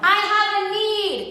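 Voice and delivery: crazy, high, slow, loud street-corner yell.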